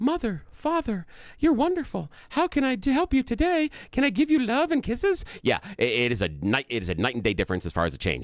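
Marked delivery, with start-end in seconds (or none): 0.0-5.2 put-on very high storybook child voice, animated-movie style. Acting out a four-year-old child as in a Disney movie: Disney-movie child voice. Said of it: "the child comes out and is like".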